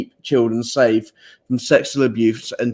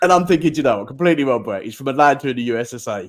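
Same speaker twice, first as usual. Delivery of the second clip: ordinary talk, nothing marked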